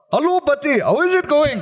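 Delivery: high, bad, fake Welsh accent drifting Indian. Showing how english people attempt the welsh accent: bad welsh accent sounding indian. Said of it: "if English people try and do the Welsh accent, they sound Indian".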